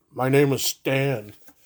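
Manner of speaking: ordinary delivery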